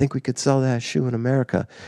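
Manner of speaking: kind of a stage whisper, soft, hushed aside. Retelling leaning over to their boss in a first meeting, retelling a half-whisper. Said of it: "kind of whispered".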